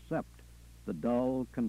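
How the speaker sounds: ordinary delivery, nothing marked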